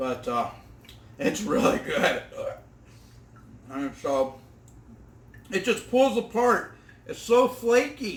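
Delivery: talking with mouth full. Speaker eating on camera, talking to viewers: talking with mouth full. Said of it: "I do apologize for eating with my mouth full".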